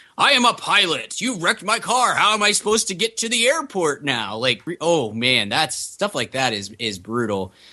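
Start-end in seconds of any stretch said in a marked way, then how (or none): 0.2-4.4 sudden, high-pitched shouting outburst. Retelling a scene where the next-door neighbor starts yelling: retelling a yell. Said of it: "he starts yelling".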